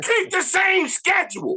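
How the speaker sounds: very high, loud, projected to the back rows. Backing another speaker's idea, the speaker repeats it louder. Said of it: "Say it louder for the people in the back".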